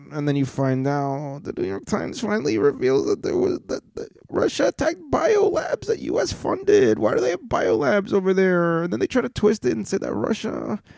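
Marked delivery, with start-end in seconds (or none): 4.2-10.7 quick, pitched-up, put-on Russian accent. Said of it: "why am I doing me in that accent?".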